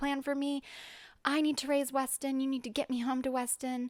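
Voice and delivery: put-on screaming. Retelling a moment of screaming to god, re-enacting the scream. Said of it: "I'm screaming to God".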